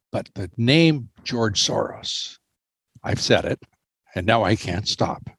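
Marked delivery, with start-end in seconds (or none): 0.2-2.4 exaggerated, hushed stage whisper. A speaker announces he will whisper a name that always causes trouble, whispering. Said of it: "So I'm going to whisper it".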